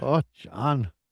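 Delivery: soft put-on Scottish accent. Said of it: "a Scottish accent".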